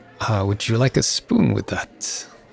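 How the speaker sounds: ordinary delivery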